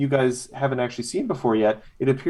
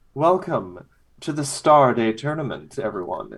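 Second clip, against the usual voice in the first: cheerful, purring, throaty voice. A voice calls out from the forest where the leshies sit: cheerful throaty purr. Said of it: "cheerful kind of throaty purr".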